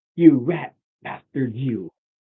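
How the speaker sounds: put-on frustrated, ranting outburst. Retelling how frustration sounds when ADHD kicks in: imitating own frustrated outburst. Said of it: "But it's the frustration".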